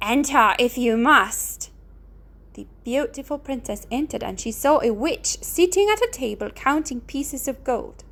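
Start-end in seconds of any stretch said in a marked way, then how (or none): 0.0-1.7 terrible, dreadful voice, much slower. Narrator reads an unseen voice answering the knocking princess, in a terrible voice. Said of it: "A terrible voice answered her".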